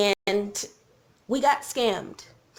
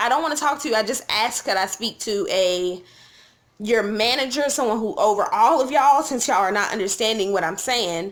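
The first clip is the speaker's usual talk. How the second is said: normal talking voice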